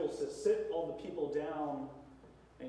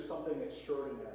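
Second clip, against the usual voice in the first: plain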